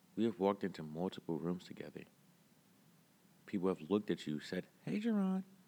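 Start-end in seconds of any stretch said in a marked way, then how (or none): 4.9-5.4 very high put-on girly voice. Quoting people who greeted Jaron in rooms, in a put-on girl voice. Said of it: "Why does it have to be in a girl voice".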